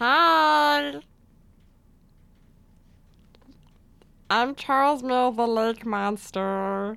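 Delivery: cartoon alien creature voice, hi stretched long. Introducing himself in a studio Q&A in the Charles Mill Lake Monster voice. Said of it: "You sound a lot like Stitch from Lilo and Stitch".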